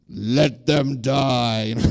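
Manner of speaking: big, booming, pulpit-style church preacher voice. Imagining what the church would say, in a big booming church voice. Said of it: "big booming uh, church voice".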